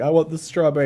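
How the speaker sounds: put-on high, crying little kid baby voice. Retelling how a baby cried for strawberries: imitating a crying baby. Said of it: "crying, like".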